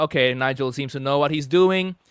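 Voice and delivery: ordinary talk, nothing marked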